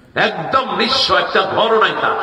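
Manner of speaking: emphatic, exclaiming delivery.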